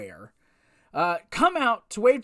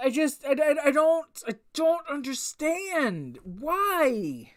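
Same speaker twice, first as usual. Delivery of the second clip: high, slow whining with a drawn-out "why"; 5 semitones higher than usual. Complaining that Becky got the SmackDown title again: whiny voice. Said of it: "I sound so whiny right now".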